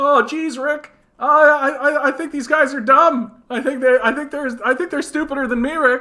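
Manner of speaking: high loud stammer. Acting out a cartoon scene of Earth: Morty impression. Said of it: "I think my Morty's okay".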